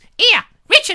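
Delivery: shrill screeching, very high and very loud. Retelling an invitation from Cynthia, imitating Cynthia's screeching voice. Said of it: "stop screeching at me, woman".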